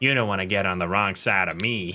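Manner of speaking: low, odd, shady villain character voice. Storyteller voices a character he is introducing, weird voice for a character. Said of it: "I give him a bit of a weird voice for this guy".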